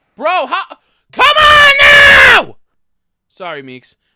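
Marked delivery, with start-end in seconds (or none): 0.2-2.6 very loud, very slow, high, shrill, drawn-out scream. Reacting with Meeks listening when it does that again: screaming. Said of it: "I didn't mean to fucking scream".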